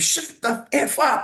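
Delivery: play-acted very high, very drawn-out unhinged cry. Retelling a line screamed during an audition scene: imitating a scream. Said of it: "I just screamed".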